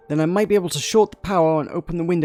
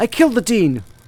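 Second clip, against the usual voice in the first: pushed-out, louder, raised and pitched-up voice; 5 semitones higher, 4 dB louder than usual. Pushed to confess a made-up crime, told to say it louder: saying it louder.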